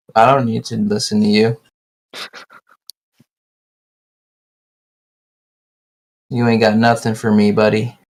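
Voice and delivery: flat, monotone delivery. Answering another speaker in a chat: monotone voice. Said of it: "why are you so monotone".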